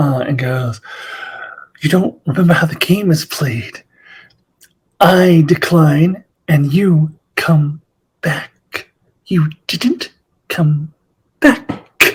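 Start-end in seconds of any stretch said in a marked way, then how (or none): 1.8-12.1 mock seductive, sultry, playful, teasing delivery. Retelling a scene where Uhura pretends interest: imitating Uhura being very sexy. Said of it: "very sexy about it".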